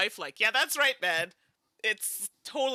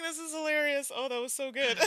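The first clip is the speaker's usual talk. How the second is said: higher voice, giggling and laughing through words; 6 semitones higher than usual. Reacting to another player's joke, laughing while talking. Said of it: "Oh, I'm crying".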